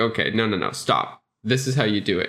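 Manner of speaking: ordinary delivery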